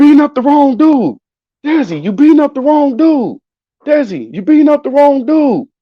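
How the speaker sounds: very high, urgent shouted yell. Retelling a fight, imitating dad yelling at the cousin. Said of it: "Do you hear my dad yelling".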